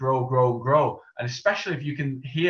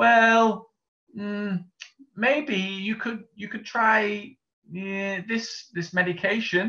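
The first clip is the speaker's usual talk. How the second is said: faltering, stop-start, unsure voice, pitched up; 8 semitones higher than usual. Demonstrating a voice without confidence while suggesting a medication, uncertain and hesitant. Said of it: "you can hear in my voice I am not certain".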